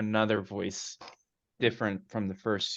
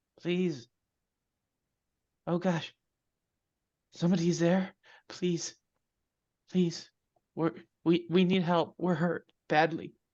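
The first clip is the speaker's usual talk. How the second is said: put-on pleading female voice, much higher; 8 semitones higher than usual. A hurt woman's voice calls out to someone she hears nearby: female voice pleading for help. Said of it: "And the female voice says".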